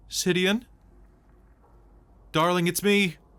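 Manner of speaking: very high calling voice. Voicing a lost wife calling to her husband from the mist: wife's voice calling out. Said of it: "your wife's voice calls out".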